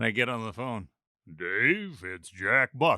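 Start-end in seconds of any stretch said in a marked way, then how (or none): 1.4-3.0 slow, careful, raised, deliberate and loud. Retelling a surprise phone call from Jack Buck: Jack Buck impression. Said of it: "I don't do impersonations".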